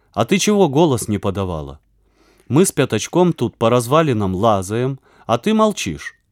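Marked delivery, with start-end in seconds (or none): none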